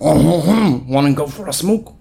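terrible fake French accent, very slow. Joking that police avoid paperwork: terrible French accent. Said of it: "That was a terrible French accent".

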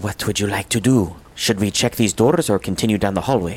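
hushed whisper. Speaking in character to the crew about where to go next, whispering. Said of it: "I whisper to the crew".

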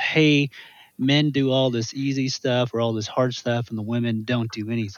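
ordinary delivery

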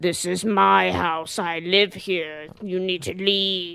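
own voice, dropped a little. Retelling a sister talking to herself in the bedroom corner, slightly deeper version of her voice. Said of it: "a slightly deeper version of her voice is like".

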